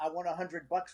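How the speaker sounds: plain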